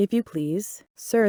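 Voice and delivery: meek, shy, timid, quiet little voice. Alice, desperate, asks the rabbit for help; low, timid voice. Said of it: "in a low, timid voice".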